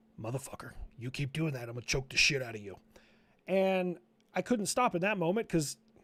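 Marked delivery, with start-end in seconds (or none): 0.2-2.8 put-on low, hoarse, sore-throat voice. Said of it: "he was talking like this".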